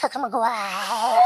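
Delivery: small, furry, fuzzy creature voice. Showing the voice used for a fuzzy creature role: Gizmo voice. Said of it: "it's the same voice. He goes".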